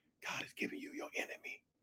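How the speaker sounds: barely voiced, soft, gentle, hushed whisper. Acting out his whispered words, soft whisper. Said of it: "This is his whisper".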